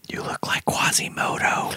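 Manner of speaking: acted, hushed whisper. Retelling going over to her and looking her in the eyes, retelling a whisper. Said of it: "I apparently whispered".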